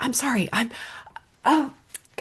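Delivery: breathy, acted-out, anguished whisper. Retelling an acting student's reaction to a phone interruption: imitating someone in agony. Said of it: "she was in agony about it".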